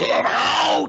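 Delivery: rough, creaky, over-driven movie-style yell, toned down to half-shout. Describing a horror movie scene and acting out its line: retelling an over-loud movie shout. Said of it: "It's like it's louder than anything else in the movie".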